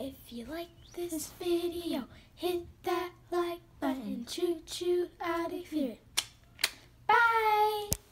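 quiet, soft, low voice. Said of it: "our theme a little quieter".

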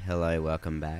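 flat, dull, lifeless, unexcited. Showing the other host how not to greet listeners: flat, unexciting delivery. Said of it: "Gotta be more dynamic than that".

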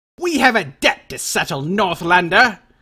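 sibilant, hissing, hissed delivery. Narrator voicing a rider confronting the surrounded northlander, hissing. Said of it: "Hisses Rourke".

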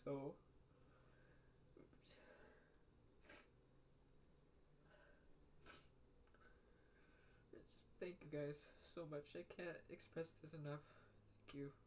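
tearful, voice breaking. Thanking followers for their supportive messages, with voice breaking and crying. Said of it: "My voice is giving".

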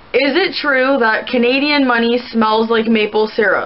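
normal talking voice

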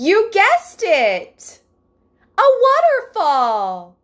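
very high, loud, squeaky sing-song voice with swoops. Speaking to Libra about a card's background, answering in a bad Dora voice. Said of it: "I do a really bad Dora voice".

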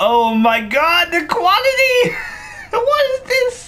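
very high, loud, slow, amazed squeal.

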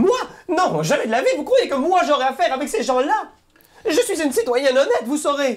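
vexed, indignant tone, pitched very high. Game master voicing a shopkeeper vexed by the players' question: offended and indignant.

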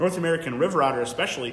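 ordinary delivery, nothing marked

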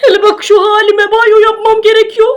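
sobbing, tearful, wailing bear voice.

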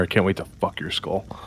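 soft, hushed whisper very close. Whispering a threat into a grappled foe's ear: whispering in her ear. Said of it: "I'm gonna whisper in her ear".

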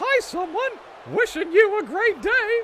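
high, loud squeaking voice. Answering a request for an impression by wishing someone well, Mickey Mouse impersonation. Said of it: "Can you do Mickey Mouse impersonation?".

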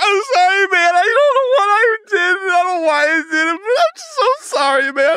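play-acted, very high, tearful sobbing. Retelling a scene where a character apologizes after stabbing someone: mock sobbing apology. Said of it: "he begins sobbing and apologizing".

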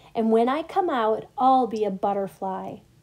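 plain

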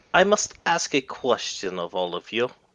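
put-on spoken up in a Russian accent. Narrating a scene, speaker voices Thalia speaking up to the group: Thalia's Russian accent. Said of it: "she sounded Russian".

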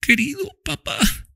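very high, strained, effortful, fading voice. A girl, her arms round her father's neck, speaks to him with a last effort. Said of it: "dijo la niña con un último esfuerzo".

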